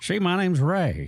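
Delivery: slow, high, bragging bar-regular drawl. Retelling a talk with a guy met in Las Vegas: imitating Ray's way of talking. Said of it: "Old Ray talked like this".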